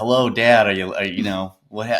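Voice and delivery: normal talking voice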